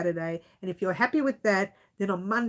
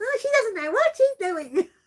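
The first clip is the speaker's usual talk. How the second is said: whingeing, nagging whine, very high-pitched; 13 semitones higher, 5 dB louder than usual. Imitating viewers complaining about her project: imitating a whingeing voice. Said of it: "Whinge, whinge, whinge".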